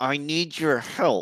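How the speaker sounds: forced out through gritted, clenched teeth. A detective has to ask Donnie and his group for help: through clenched teeth. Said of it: "talking through clenched teeth".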